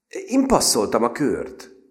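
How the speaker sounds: hesitant, unsure. During a card game, another lady says she passed the round, uncertain. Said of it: "mondta a másik hölgy bizonytalanul".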